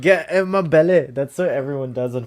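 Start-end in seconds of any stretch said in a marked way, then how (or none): 0.0-1.1 loud, raised, belted bad Scottish accent. Doing the Scottish accent everyone does: Fat Bastard voice. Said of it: "is fat bastard".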